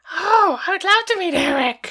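very high, creepy, eerie, motherly voice. Retelling Adam speaking as his mom about meeting Eric, Norman Bates mother voice. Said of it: "That was awful. I don't ever want to hear that again".

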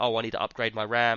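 ordinary talk

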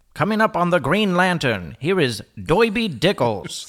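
put-on 1940s-style old-time radio announcer delivery. Reading a segment introduction in a 1940s radio announcer voice. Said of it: "I feel like I have to do this in like a 1940s radio voice".

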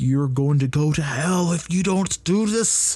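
put-on screaming preacher voice, pitch climbing steadily. Speaker recalls church pastors from earlier in life, imitating a screaming pastor. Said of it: "the pastors would be just screaming".

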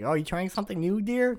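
very high-pitched, light voice. Retelling a scene from the episode, voicing Linda: Linda impression. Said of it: "Linda's like".

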